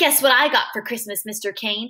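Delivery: ordinary delivery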